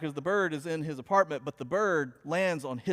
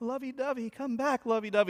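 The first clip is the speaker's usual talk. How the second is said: put-on sad whisper, higher pitch; 7 semitones higher than usual. Retelling a TV scene where a bird escapes: imitating Sheldon whispering sadly. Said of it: "whispering, like".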